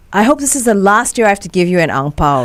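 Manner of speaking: ordinary talk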